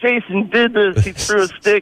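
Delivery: high, weepy voice through tears. Retelling how his crying brother pointed at him in front of their mom, imitating brother crying. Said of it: "And he's crying".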